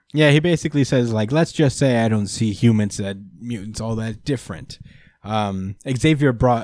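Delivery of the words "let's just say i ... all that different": plain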